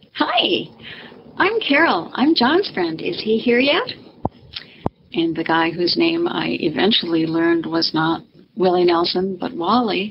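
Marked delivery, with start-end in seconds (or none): 0.1-3.8 put-on perky, naive young Minnesota woman voice, high, sing-song. Retelling introducing herself as john's friend to a stranger, perky naive minnesota girl voice. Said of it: "in my perky 19-year-old naive Minnesota girl voice".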